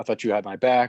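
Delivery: ordinary delivery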